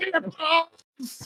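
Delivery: very high-pitched, loud, exasperated shout. Asked to say Tipples in the friend's voice: imitating a friend's voice. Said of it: "it'd be like".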